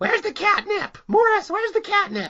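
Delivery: squeaky, very high little cat voice. Host imagines Billy doing the cats' voices, in a cat voice. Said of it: "Billy's doing the voice of three cats".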